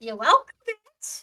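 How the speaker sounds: cracking, squeaky voice. Telling the other speaker they're welcome: voice cracking, squeaky. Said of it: "that was a voice crack".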